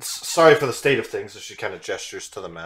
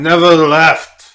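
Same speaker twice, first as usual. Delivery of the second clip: very loud, grumbly, pitched-up voice; 7 semitones higher, 14 dB louder than usual. Narrating a walk down a staircase, voicing the answer to a call: grumbly voice.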